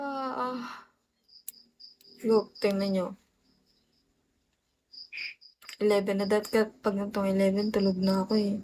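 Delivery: sleepy, drowsy voice. Chatting with viewers late at night while very sleepy: sleepy voice. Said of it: "Sorry, guys, for my voice. I'm very sleepy".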